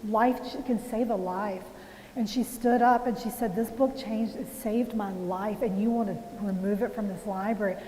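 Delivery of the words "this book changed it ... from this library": usual speaking voice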